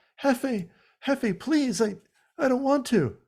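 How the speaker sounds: put-on very high, whiny whimpering. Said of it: "pleading and, like, whimpering".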